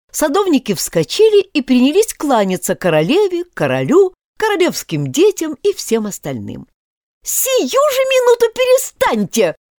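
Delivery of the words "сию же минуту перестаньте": very high, shrill, shrieking scream. Narrator reads the queen ordering the bowing gardeners to stop, screaming. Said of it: "завопила королева".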